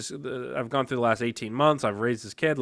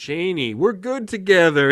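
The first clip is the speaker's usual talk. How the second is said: put-on smarmy, oily little voice, slow drawl; 6 semitones higher, 8 dB louder than usual. Reading aloud a book's male character pleading with Janie: imitating a smarmy man. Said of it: "He sounds like this, like, schmarmy little".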